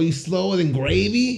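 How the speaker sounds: attempted high New Jersey accent. Trying out regional accents in a group conversation: New Jersey accent. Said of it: "That's more New Jersey".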